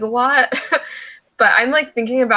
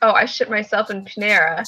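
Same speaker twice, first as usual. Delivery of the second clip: usual speaking voice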